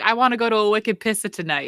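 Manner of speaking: put-on broad-vowelled Maine accent. Retelling what a cousin from Maine says, imitating a Maine accent. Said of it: "I got a cousin from Maine who's like".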